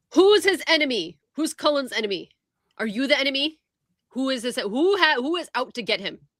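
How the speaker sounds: high, aggressive, in-your-face tone. Playing a character leaning in to interrogate someone: intimidating in someone's face. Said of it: "right up in his face".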